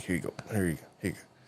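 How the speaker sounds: voice pushed down into the chest, repeated. Retelling how a man handed over money: imitating a chest voice. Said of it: "like, in his chest".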